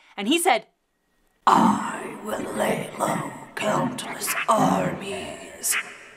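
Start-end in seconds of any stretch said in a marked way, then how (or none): 1.5-5.8 scary, menacing put-on voice, much lower and slower. Retelling a horseman's reply to the speaker's question, in a scary voice. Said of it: "[scary voice]".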